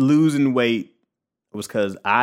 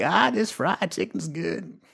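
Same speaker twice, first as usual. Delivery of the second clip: put-on creaky, slurpy, old-school, savoring grandma voice; 5 semitones higher, 6 dB quieter than usual. Retelling how grandma enjoyed food, imitating grandma savoring food. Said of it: "she's from that old school era of like".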